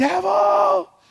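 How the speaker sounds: mock very high-pitched scream at full volume. Retelling bursting through the door at night: retelling a scream at the top of lungs. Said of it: "I screaming at the top of my lungs".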